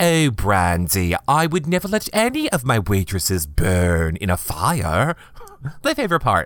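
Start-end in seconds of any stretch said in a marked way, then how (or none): 0.0-5.2 slow, bad British accent, "fire" drawn out. You quote your favorite line from the reunion, in a bad British accent as Lisa. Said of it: "that was a horrible British accent".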